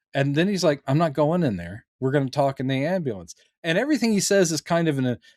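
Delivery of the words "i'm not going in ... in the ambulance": usual speaking voice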